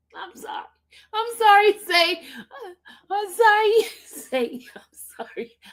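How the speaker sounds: laughing while speaking. Apologizing to the others after a shocking remark, laughing while talking. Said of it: "I don't mean to laugh".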